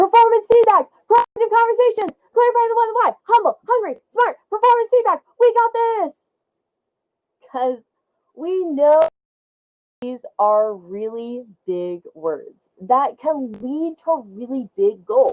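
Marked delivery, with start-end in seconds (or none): 0.0-5.2 shrill, very high, loud yelling. Shouting work buzzwords the way a friend yelled a football word: imitating Achinthia yelling.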